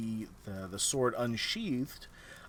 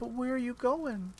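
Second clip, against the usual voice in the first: put-on sweetest tiny little girl tone, very high; 13 semitones higher than usual. The game narrator voices a little girl only Astrid hears, sweet tiny little girl voice. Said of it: "in just the sweetest little, tiny little girl tone".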